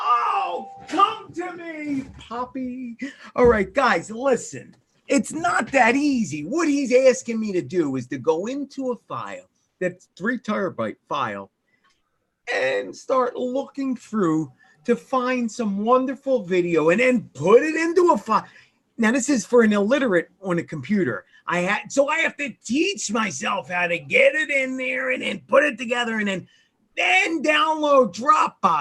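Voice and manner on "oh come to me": high, drawn-out yelling. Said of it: "Michael, don't yell at the neighbors".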